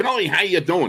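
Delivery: piping squeaky tone. Recounting a phone call at the Super Bowl, quoting Myron Cope's squeaky high voice. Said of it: "he had that squeaky high voice".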